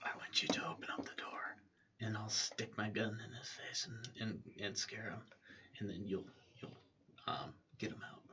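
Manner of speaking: very quiet, barely audible whisper. Telling another player in character to open the door: whispering. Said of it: "I'll whisper to you".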